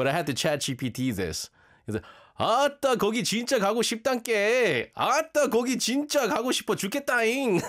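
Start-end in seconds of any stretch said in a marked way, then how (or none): 2.4-7.6 Jeolla Korean accent, higher, much slower. Speaker from a Gyeongsang family tries a line in Jeolla dialect, Jeolla Korean accent. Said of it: "there's a way to say it in the Jeolla accent".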